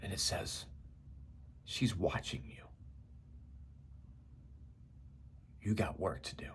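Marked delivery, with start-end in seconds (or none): 1.7-6.5 tender, soft, hushed, loving near-whisper. Retelling what a voice said back: imitating a soft loving near-whisper. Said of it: "in a softer, more loving tone, almost a whisper".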